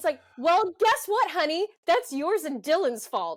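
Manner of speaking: heated shouting. Complaining into the mic about Brenda making it all about her, yelling. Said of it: "I'm yelling in the mic".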